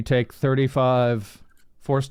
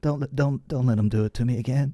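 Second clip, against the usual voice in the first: mock whisper, close as if in the ear. Acting out what Bale says into someone's ear on the way up: imitating Bale whispering. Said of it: "Bale like whispers in your ear".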